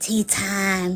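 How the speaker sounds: soft, grating, annoying little voice. Telling the audience about a woman, doing Vada's annoying voice. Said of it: "She talked like this".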